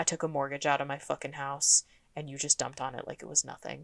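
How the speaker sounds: put-on low, deep, menacing, hushed voice. Recounting a woman who leans in really close to Jesse, imitating a deep, scary voice. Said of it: "her voice gets all deep and scary".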